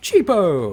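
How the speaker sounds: put-on deadpan voice. Joking after remarking on sounding like Ashens: Ashens impression. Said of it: "I sound like Ashens".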